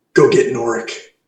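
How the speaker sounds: soft, hushed half-whisper in character. Voicing a character telling an ally to fetch someone: in-character half-whisper. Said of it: "I whisper to Monty".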